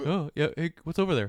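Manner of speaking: put-on giraffe voice. Imagining being a human giraffe with a long neck: giraffe voice. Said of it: "I love my giraffe voice".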